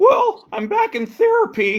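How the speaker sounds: very high, slow, frog-like puppet voice. Joking with a co-host about Jordan Peterson, doing Jordan Peterson sounding like Kermit. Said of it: "He sounds like Kermit the Frog".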